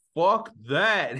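sudden, loud, high-pitched blurted outburst. Retelling a man's reaction to not charging a cleaning fee, retelling a loud outburst. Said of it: "and he's real loud".

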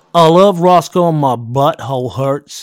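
booming, deliberate, loud, slow put-on American accent. Asked by another speaker to say a line in American, American accent. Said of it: "Say that in American use".

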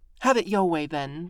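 grave, grim tone. A girl confronting another girl who denies knowing of a prank, speaking grimly. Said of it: "the other girl said grimly".

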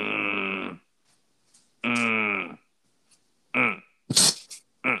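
low, soft, deep grunting.

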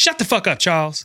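snapping, sharp irritated tone. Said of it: "and his wife says".

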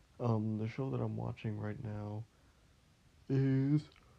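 word stretched out through a yawn while talking. Talking about the show currently being watched: yawning while talking. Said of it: "Sorry, I yawned".

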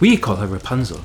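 ordinary talk

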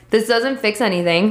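normal talking voice

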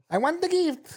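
bad put-on Filipino accent. Acting out someone demanding a gift in a put-on filipino accent. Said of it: "I think I have a Filipino friend".

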